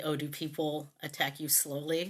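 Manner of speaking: ordinary talk, nothing marked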